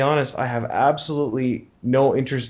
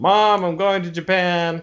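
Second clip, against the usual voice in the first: put-on, high, drawn-out calling out; 5 semitones higher than usual. Retelling calling out to Mom at home: retelling own past yell. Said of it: "I yelled out".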